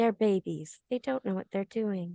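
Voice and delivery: hushed, muttered whisper under the breath. Playing a character in a game scene, whispered under breath. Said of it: "whisper it under my breath".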